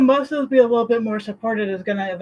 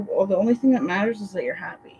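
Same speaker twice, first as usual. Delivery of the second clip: ordinary talk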